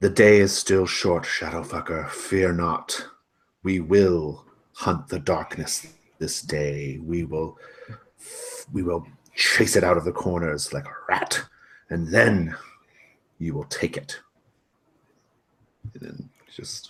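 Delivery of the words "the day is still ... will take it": loud hissed whisper. Voicing a character heard across the snow: loud whisper. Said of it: "you hear that loud whisper again".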